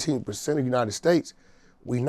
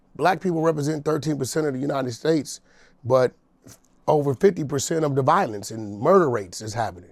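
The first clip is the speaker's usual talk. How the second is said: plain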